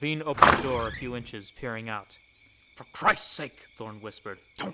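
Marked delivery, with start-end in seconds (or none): none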